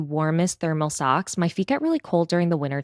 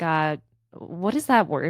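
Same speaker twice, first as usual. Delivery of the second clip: flustered, stumbling over words. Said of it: "This is how I was speaking".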